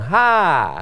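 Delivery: ha said with a falling pitch. Tone lesson, modelling a syllable after praise: falling tone on ha. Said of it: "met een vallende toon".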